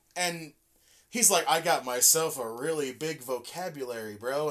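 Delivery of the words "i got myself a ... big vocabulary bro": usual speaking voice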